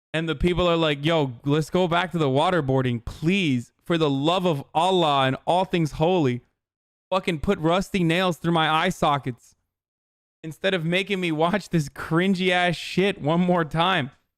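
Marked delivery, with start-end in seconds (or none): none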